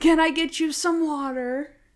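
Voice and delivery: high, stretched-out, drawn-out scream. Retelling a scene from the show, imitating a scream. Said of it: "he screams it".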